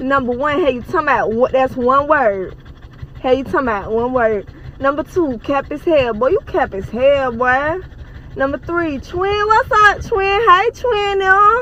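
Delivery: broad, rough Atlanta, Georgia accent. Showing viewers how words sound in an Atlanta accent. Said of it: "This the Atlanta Accent Challenge".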